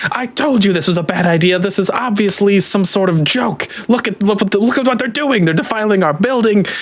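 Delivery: shrill, high-pitched, furious screaming. Voicing an NPC in a screaming match with a captain: angry screaming at someone. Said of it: "almost like a screaming match".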